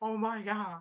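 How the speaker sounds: stunned, aghast, shocked outburst. Retelling an episode where the king learns of the plot: imitating a shocked king. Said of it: "he was shocked".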